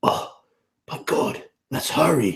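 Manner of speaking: slow, muttered half to himself under the breath. Voicing a character urging haste over a body: said under his breath. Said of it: "kind of say under his breath".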